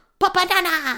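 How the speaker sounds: very high, loud cartoon squeak. Reading out a sign, the speaker switches into a Minion voice. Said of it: "I've got to do it in a Minion voice".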